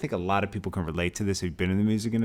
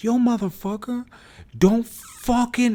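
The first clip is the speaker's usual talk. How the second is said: shrill, high, raised, spazzing yell; 7 dB louder than usual. Retelling yelling back at a promoter who swore: imitating own yelling. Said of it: "So I yell back at him".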